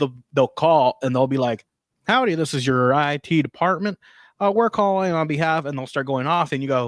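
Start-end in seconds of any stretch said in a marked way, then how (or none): 2.1-5.6 put-on American Western accent. Retelling scam callers posing as the IT department: imitating a Western accent. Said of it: "you're talking with a Western accent".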